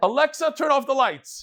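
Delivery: shrill, high, squawked screech like a parrot. Telling a joke about a parrot on Shabbos, doing the parrot's scream. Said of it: "the parrot screams".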